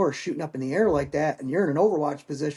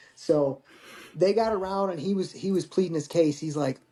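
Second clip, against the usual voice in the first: ordinary talk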